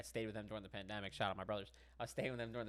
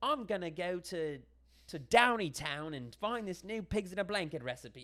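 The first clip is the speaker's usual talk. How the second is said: very British put-on accent, high, drawn out; 8 semitones higher, 9 dB louder than usual. Describing a random British person on a show, in a put-on British accent. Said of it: "like so British, you know, like accent".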